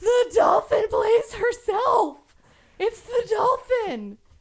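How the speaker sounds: high, loud, slow tearful exasperated shout.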